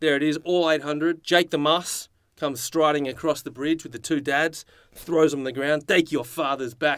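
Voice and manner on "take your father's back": put-on poor New Zealand accent. Retelling a scene as Jake the Muss strides across the bridge; bad New Zealand accent. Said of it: "That's the worst New Zealand accent".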